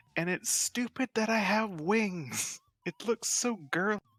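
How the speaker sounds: loud, very high, angry complaining outburst. Voicing a character heading up the stairs after a secret is shared, louder and angrier. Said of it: "in a much louder voice and more angry".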